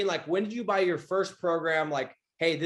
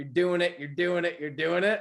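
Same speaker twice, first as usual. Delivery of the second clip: hoarse, raspy, rough-edged voice. Quoting a favorite guy's saying: imitating Mister Gerber's raspy voice. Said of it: "in his freaking raspy ass voice".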